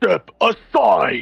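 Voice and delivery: booming, rough voice. A tabletop player speaks their character's command, in a booming voice. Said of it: "with a booming voice".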